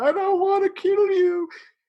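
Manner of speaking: very high-pitched, slow, sobbing, bawling wail. Retelling a film scene where a character pleads while crying: imitating someone bawling. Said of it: "literally bawling".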